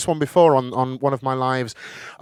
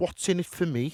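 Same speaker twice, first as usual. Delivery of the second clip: put-on Scouse, Liverpool-accented voice; 4 semitones higher, 9 dB quieter than usual. Telling a story, the speaker voices Artie's reply to the man: Artie in a Liverpool accent. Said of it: "I've never done it in Liverpool accent before".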